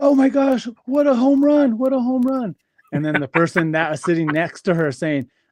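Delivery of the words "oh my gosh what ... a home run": mock, very high, shrill screaming. Retelling the moment his mom cheered a touchdown run in the stands: imitating his mom screaming.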